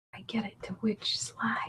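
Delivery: slow, very quiet, barely voiced hushed whisper. Helping someone find a slide in the PDF: whispering. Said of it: "I'm sorry I'm whispering".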